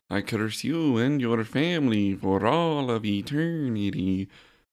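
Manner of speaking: slowly drawn-out delivery. Quoting a curse line from a movie: Madame Zeroni voice. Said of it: "just like Madame Zeroni from Holes".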